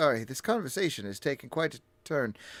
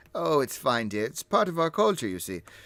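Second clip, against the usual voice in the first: put-on voiced as an elderly man. Voicing an older man who shushes a player: voicing an older man. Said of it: "He's like".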